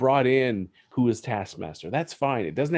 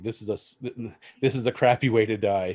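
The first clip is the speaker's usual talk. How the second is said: normal talking voice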